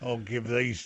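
put-on Australian accent. Joking with the others in a put-on Aussie accent. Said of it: "the Aussie accent".

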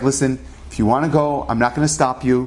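normal talking voice

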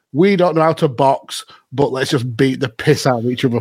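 ordinary delivery

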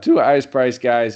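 voice cracking. Going over player prices on one team, voice cracking. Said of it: "I just did a Santino voice crack".

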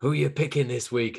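mock elderly woman voice. Retelling the old woman's line from Running Man: imitating the old woman from Running Man. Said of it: "the old woman who's like".

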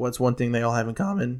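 voice cracking partway through. Explaining favorite Star Wars characters and asking what they share, with a voice crack. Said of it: "Whoa, voice crack".

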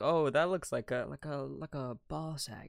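put-on whisper. Retelling pointing out the slide to mom: imitating own whisper. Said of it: "I would, like, whisper it to my mom".

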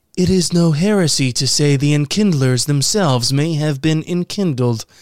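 put-on alien creature voice. Reading a news quote, the speaker switches into a Hanar voice. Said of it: "Let me do my Hanar voice".

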